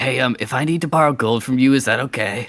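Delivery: whispered aside in character voice. Voicing a character who asks a companion about borrowing gold: whispering in character. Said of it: "I'll whisper in and say".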